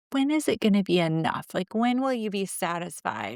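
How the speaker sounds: ordinary talk, nothing marked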